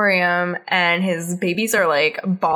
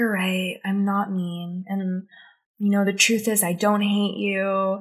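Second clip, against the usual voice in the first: put-on halting, effortful speech, quieter; 4 dB quieter than usual. Retelling a cartoon scene, imitating Helga struggling to speak. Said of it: "struggling to say it".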